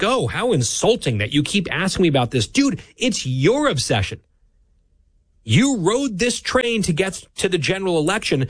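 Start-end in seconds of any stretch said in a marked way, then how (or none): none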